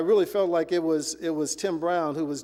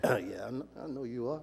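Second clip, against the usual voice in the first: soft, barely directed mumble under the breath; 5 semitones lower, 9 dB quieter than usual. Retelling being greeted on the porch: imitating mumbling to oneself. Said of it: "I'm mumbling to myself".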